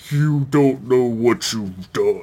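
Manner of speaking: ancient sci-fi alien voice. Talking with a friend about Stargate, comparing the aliens, in a Goa'uld voice. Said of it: "They even talk in the same voice".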